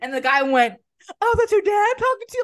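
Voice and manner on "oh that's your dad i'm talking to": very high, taunting, mocking tone. Retelling how a man answered her defending her dad: imitating a man mocking her. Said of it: "he mocked me".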